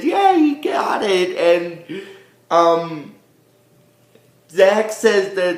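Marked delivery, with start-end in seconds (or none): 0.0-1.4 very high, tiny, squeaky little voice. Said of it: "he makes a little squeaky voice".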